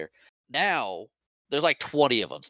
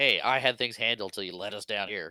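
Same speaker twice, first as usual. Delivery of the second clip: ordinary delivery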